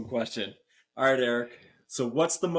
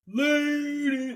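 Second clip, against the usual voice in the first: put-on very high, childish holler, stretched long. Retelling how their son yelled back at the neighbor, imitating a kid yelling. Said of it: "starts yelling it back".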